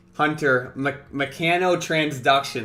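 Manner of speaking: plain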